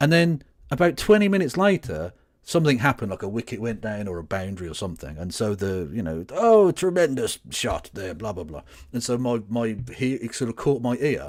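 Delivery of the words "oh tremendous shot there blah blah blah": goofy, silly cricket play-by-play commentator voice. Speaker recalls his dad commentating cricket, imitating dad's silly commentator voice. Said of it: "He's still doing that silly voice".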